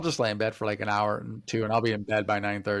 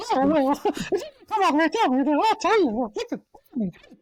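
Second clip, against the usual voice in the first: put-on cartoon mouse voice; 5 dB louder than usual. Retelling what was said to the Minnie Mouse actress: Mickey Mouse voice. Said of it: "do your Mickey Mouse voice".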